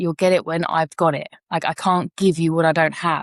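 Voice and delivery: ordinary talk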